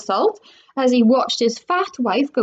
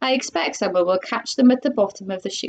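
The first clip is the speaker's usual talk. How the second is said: ordinary delivery, nothing marked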